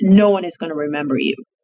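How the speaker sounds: put-on tone of firm conviction. Retelling what a floor director told them: imitating someone saying it with conviction. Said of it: "she'd say to me with so much conviction".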